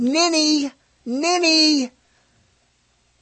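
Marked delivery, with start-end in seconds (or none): 0.0-1.9 high mock scream. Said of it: "Start screaming from my subconscious".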